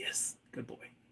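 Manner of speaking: gentle whispered voice.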